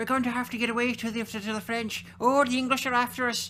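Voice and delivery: very high, very loud, shrill put-on Irish accent. Improvising a scene of fleeing peasants, speaker does an Irish accent. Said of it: "In Irish accents".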